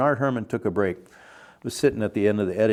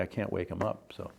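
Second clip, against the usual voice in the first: put-on tearful, pleading crying voice, quieter; 10 dB quieter than usual. Retelling a young woman's words in a hotel lobby: imitating someone crying. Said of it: "she was crying in the lobby".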